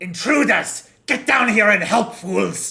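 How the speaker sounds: very high, very loud, shrill, booming monster shout. Game master voicing a creature in the scene, creature yelling. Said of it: "You do hear the creature yell out".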